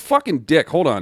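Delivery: irritated loud outburst.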